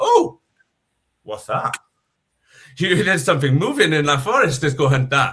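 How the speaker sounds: hungry big-cat predator lion voice. Acting out lions spotting the tagged zebra: voicing a lion. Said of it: "And the lions went".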